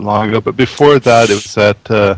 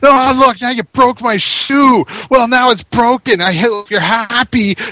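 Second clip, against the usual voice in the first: acted-out high-pitched screeching, very high screaming rant; 13 semitones higher than usual. Recounting someone freaking out at a man: retelling someone screaming. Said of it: "starts screaming at him like".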